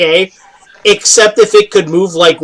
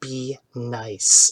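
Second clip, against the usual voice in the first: very quiet, low, soft half-whisper close to ear; 6 semitones lower, 12 dB quieter than usual. Storyteller voices a character standing next to the player, half-whispering into their ear. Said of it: "She kind of whispers into your ear".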